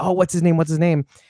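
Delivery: ordinary talk, nothing marked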